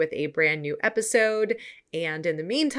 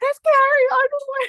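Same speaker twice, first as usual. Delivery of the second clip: put-on excited screaming, much higher, louder; 8 dB louder than usual. Retelling screaming at a brother standing next to them, retelling excited screaming. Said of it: "I was screaming at my brother".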